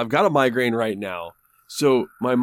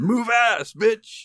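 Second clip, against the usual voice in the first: very high, shrieking, screaming yell; 11 semitones higher than usual. Acting out yelling at slow drivers through the windshield: imitating own screaming. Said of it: "I am screaming at the fucking windshield".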